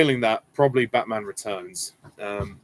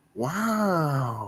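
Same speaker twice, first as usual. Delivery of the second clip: wow drawn out long, pitched high; 5 semitones higher, 4 dB quieter than usual. Showing Owen Wilson's funny way of saying one word, do an Owen Wilson "wow" impression. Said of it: "Owen Wilson does have a funny way of saying".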